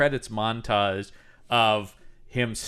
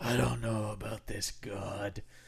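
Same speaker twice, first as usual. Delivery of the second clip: soft, slow, gritty, doubtful voice. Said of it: "it's a gritty rebirth".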